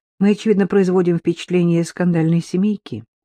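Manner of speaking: plain reading voice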